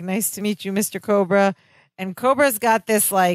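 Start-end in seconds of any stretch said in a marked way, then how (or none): 0.0-1.5 anxious speech. Retelling a scene where nervous Larry greets Cobra: imitating Larry's nervous voice. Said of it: "very nervous".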